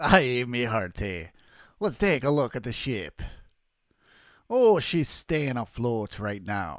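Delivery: put-on Irish-tinged pirate brogue. Playing a pirate character checking the ship: Irish pirate voice. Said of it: "I go into like Irish pirate".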